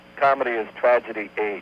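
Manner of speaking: ordinary delivery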